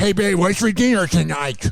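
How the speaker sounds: put-on news-anchor voice. Mocking a news anchor's delivery of a headline, imitating the newscaster's voice. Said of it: "I can't take it seriously when you sound like this".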